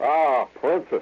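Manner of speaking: put-on slight Bavarian accent. Retelling a movie villain's line: imitating Doctor Nadir's slight Bavarian accent. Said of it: "a little bit like a Bavarian accent".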